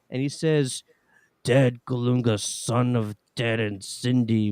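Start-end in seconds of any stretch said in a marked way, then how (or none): 1.4-4.5 slow, deliberate, drawn-out comic-book villain voice. Retelling how a man addressed him as if offering the Soul Stone, Red Skull impression. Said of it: "He's doing the voice".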